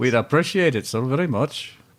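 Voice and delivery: put-on Scottish accent. Trying out accents, moving from Irish over to Scottish, in a Scottish accent. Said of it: "That was a little better".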